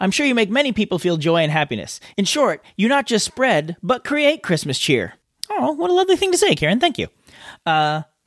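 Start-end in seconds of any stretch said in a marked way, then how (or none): none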